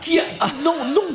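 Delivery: very high, outraged squeal of disbelief.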